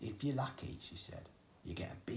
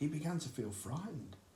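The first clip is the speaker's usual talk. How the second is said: usual speaking voice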